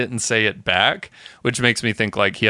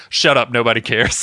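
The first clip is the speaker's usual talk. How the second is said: put-on dismissive, brushing-off tone; 2 semitones higher, 4 dB louder than usual. Retelling a TV scene, imitating Summer being dismissive. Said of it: "so dismissive of this guy".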